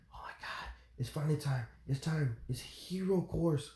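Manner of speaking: eager, excited, breathy, hushed whispered chatter. Retelling excited classmates before hero course: imitating excited classmates whispering. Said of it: "They're all whispering".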